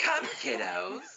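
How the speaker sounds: very high, creaky, croaky, creepy ghoul voice. Speakers reminiscing about old horror shows, one doing a Tales from the Crypt voice. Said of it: "Like that weird wizard from Your Highness".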